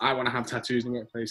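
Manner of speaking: ordinary delivery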